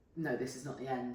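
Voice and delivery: ordinary talk, nothing marked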